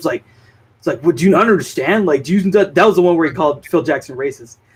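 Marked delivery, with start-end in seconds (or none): 1.0-2.5 put-on yelling with higher pitch. Retelling an interview where Scotty yelled at the host: imitating Scotty yelling. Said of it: "yelling at him".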